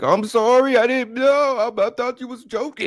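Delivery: mock desperate pleading scream, very high pitch. Picturing him being tortured and punished, imitating someone screaming. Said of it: "screaming like".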